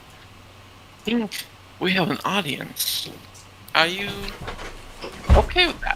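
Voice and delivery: very slow, hushed, high whisper. Voicing a character on a bed who speaks to her: whispering in character. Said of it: "and whisper to her".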